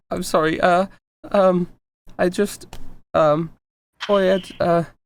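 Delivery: put-on tearful child voice, slow, halting over every word. Voicing a child at mini golf who is tearing up: tearful child voice. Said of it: "he's just crying".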